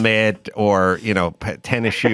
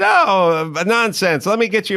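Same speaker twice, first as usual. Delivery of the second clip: put-on German accent, much higher pitch; 10 semitones higher than usual. Retelling a woman pulling on his blanket to make him a bed: imitating her German accent. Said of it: "With her German accent".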